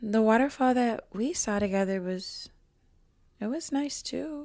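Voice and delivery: muttering under breath. Retelling what she said quietly at the sink: muttering under her breath. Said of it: "under her breath, she goes".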